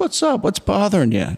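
soft, very high-pitched voice. Retelling a movie scene where the boss comforts him: soft, gentle Alan Arkin voice. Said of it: "the soft, gentle Alan Arkin".

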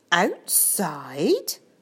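astonished, surprised, rising pitch. A man echoes a girl's words back to her: surprised. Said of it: "Mr. Brian echoed in surprise".

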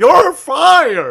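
loud, high-pitched drawl with "fired" stretched out. Joking about doing a wrestling boss's quotes: Vince McMahon quote in Jimmy Stewart voice. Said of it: "Vince McMahon quotes in a Jimmy Stewart voice".

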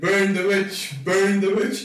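hollering, shouting. Playing a character in a tabletop game, knocking on a door: yelling. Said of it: "I start knocking on the door and start yelling".

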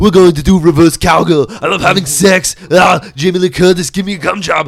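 very loud, very high-pitched caricature voice, yelled. Imitating another speaker in a True Lies scene: Arnold Schwarzenegger voice. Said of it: "why the Arnold Schwarzenegger voice".

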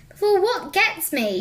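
high, shrieking scream. A woman, looking around frantically after a gust of wind, screaming. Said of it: "she screamed".

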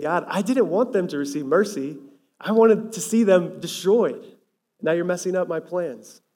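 mock petulant, upset-child whine, complaining. Explaining a Bible verse, voicing his complaint to God: mock whiny complaining kid. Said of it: "like a whiny kid who's upset".

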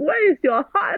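very high, crying, tearful pleading tone. Retelling crying at airport check-in to the staff there, retelling a tearful plea. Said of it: "I was like".

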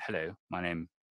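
put-on posh accent. Showing how he might introduce himself to Scottish women, in a very posh voice. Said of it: "very posh".

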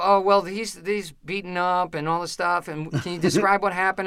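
ordinary talk

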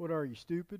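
mock dry sarcasm, very soft and hushed. Imagining how James would answer someone lacking wisdom: imitating James sarcastically. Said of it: "a little sarcasm with James".

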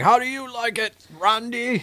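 poor put-on Scottish accent, very high-pitched. Retelling what he said to randy, in a bad scottish accent. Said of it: "Not a good Scottish".

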